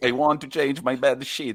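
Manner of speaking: high-pitched voice with Italian accent.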